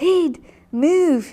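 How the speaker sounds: playful, bossy, high, loud joking yell. Joining in the other speaker's joke about telling someone to move: mock yelling. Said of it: "I may just start yelling".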